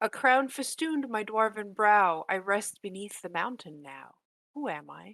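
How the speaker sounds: loud, disembodied voice seeming to come from nowhere. Voicing what players hear on entering the circle: disembodied voice. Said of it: "you hear a disembodied voice go".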